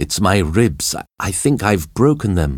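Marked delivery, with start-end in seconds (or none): none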